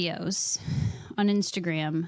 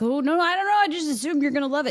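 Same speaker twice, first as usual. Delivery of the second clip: put-on, hasty, flustered tone, pitched up; 7 semitones higher, 4 dB louder than usual. Retelling what a brother said when caught out: imitating someone backpedaling.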